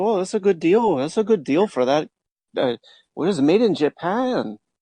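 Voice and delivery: put-on Midwestern accent. Mocking Midwestern viewers of home shopping deals, in a put-on Midwestern accent. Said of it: "your Midwestern sounds like a Bangladesh".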